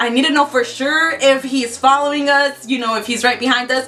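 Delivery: ordinary delivery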